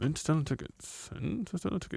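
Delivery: hushed, whispered muttering under the breath. Retelling a ticket scalper calling out: imitating someone muttering under breath. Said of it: "he was just kind of under his breath".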